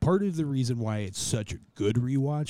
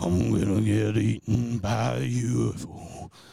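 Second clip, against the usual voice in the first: rough, gravelly acted voice.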